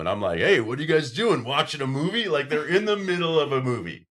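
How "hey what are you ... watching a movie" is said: put-on, obnoxious, self-important barging-in voice. Retelling bursting in on roommates watching a movie: imitating own past barging-in self. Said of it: "I burst in and I'm in total main character syndrome".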